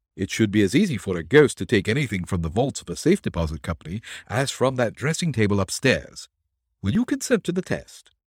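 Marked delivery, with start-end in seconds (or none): none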